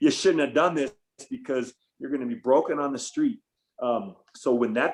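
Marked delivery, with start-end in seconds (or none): none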